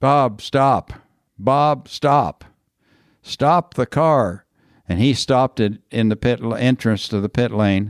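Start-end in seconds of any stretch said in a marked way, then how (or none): 0.0-4.4 yelling, called out high and slow. Speaker recounts a drive where Bob kept doing the same thing: retelling yelling at Bob. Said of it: "I just started yelling at him".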